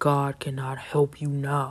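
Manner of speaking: warped, distorted demonic voice. Retelling a man's words to a praying woman: imitating a demonic voice. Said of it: "voice distorted into a demonic tone".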